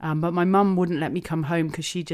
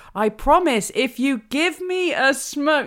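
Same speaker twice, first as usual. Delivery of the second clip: raised voice, pushed up very high and loud; 11 semitones higher, 7 dB louder than usual. Recalling a hospital conversation with the listener, retelling a raised voice. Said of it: "I started to raise my voice".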